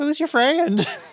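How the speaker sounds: high, loud creepy voice. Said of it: "And he's like".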